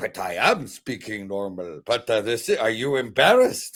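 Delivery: put-on Pakistani man voice, fully in character.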